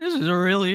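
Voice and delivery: voice cracking and breaking mid-phrase. Picking players while reading super chats on a stream, voice cracking. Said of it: "I don't know why the fuck my voice just cracked".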